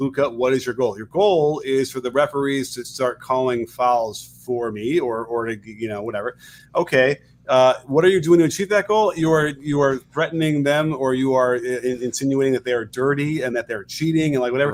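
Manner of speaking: ordinary talk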